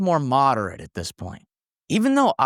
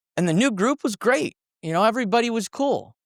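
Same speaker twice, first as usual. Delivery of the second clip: ordinary talk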